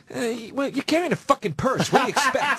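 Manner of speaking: stand-up comic voice, stammering start, then rapid delivery. Retelling what Burr asked after the insult: imitating Bill Burr. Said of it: "And he goes".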